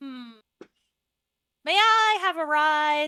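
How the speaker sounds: high, slow little mushroom creature voice. Voicing a mushroom who asks Delos for a ride: talking mushroom voice. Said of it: "and it looks at you, Delos, and says".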